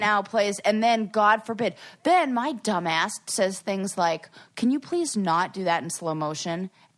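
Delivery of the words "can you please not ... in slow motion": earnest, pleading voice, lower. Retelling own request to the crew: retelling an earnest request. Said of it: "saying it in earnest".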